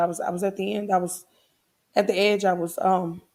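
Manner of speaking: fighting tears, faltering, words breaking off. Telling listeners about feeling alone with no support, holding back tears. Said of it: "I'm trying not to cry".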